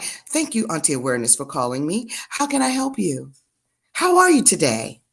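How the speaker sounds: put-on, polite, sing-song customer-service phone voice. Acting out answering a caller's call, in a put-on phone-answering voice. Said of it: "you're gonna get that voice".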